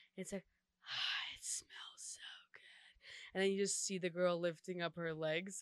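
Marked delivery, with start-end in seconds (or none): 0.5-3.4 put-on very creepy voice, quieter, much slower. Describing a sound played in a girl's bathroom, imitating the creepiest voice. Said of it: "it's like the creepiest like voice".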